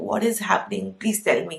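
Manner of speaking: put-on crying, tearful voice. Retelling begging a doctor before surgery: imitating own crying plea.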